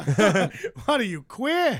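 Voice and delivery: good, laid-on put-on Louisiana accent, swooping pitch. Performing a bit learned from a show, Louisiana accent. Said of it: "That's a very good Louisiana accent".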